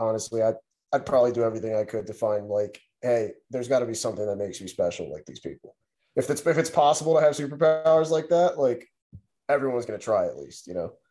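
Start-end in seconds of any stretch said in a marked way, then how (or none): none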